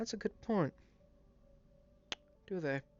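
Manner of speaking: speaking on a sigh. A game master voicing a woman answering the adventurers: sighing. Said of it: "you hear this sigh as she simply says".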